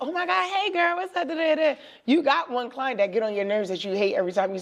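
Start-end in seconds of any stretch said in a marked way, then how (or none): 0.0-1.7 acted, bubbly, over-friendly, high, gushing, excited tone. Acting out greeting an ideal client, in contrast to an annoying client: an excited greeting.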